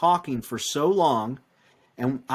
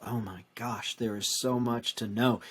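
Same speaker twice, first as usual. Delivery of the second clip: put-on muttering under the breath, quieter; 3 semitones lower, 7 dB quieter than usual. Retelling what a lady at a clinic said: imitating a mutter under breath. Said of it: "she just under her breath".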